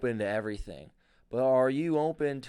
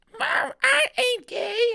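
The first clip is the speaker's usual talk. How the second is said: botched creaky demon voice, very high and rough; 6 dB louder than usual. Acting out a demon answering his mom, in a botched demon voice. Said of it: "I'm fucking up the demon voice".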